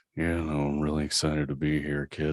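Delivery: put-on gruff movie hero voice. Greeting a podcast host after being welcomed, doing a Harrison Ford voice. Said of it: "should I do this like, like Harrison Ford?".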